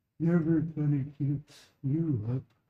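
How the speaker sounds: dim, oafish lizard creature voice. Showing different character voices, in an old oaf lizard-folk voice. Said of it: "what if it's the old oaf, but he's a lizard folk".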